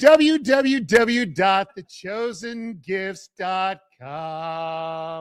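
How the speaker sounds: sounds like a surfer. Reading out the shop's web address to listeners, sounding like a surfer. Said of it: "That sounded like a surfer saying it".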